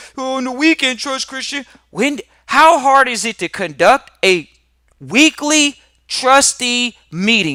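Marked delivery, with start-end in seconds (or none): 0.2-1.7 mock scornful, derisive, grudging grumbling tone. Mimicking people with a job mentality who complain about meetings: mocking imitation of job-minded people. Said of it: "That's how jobs sound".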